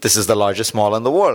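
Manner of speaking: usual speaking voice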